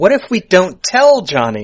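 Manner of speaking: slow, loud, drawn-out, dawning-idea tone.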